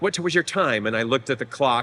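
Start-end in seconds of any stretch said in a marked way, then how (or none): 0.0-0.9 kind of flustered, a bit thrown tone. Retelling how a flustered woman at an audition asked: imitating someone flustered. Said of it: "she got kind of flustered".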